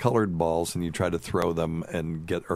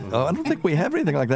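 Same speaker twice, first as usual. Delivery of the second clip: high, fast, confused voice. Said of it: "they were like".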